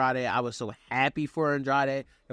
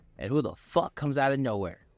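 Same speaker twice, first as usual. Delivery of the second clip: ordinary talk, nothing marked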